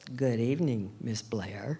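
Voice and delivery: put-on stiff, proper, very formal voice. Retelling a late-night meeting with Dean Kimball: imitating a very formal voice. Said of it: "said in a very formal voice".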